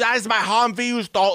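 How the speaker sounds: put-on over-the-top German accent. Retelling a movie line by a german humvee owner: crazy german accent. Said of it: "the most crazy German accent ever".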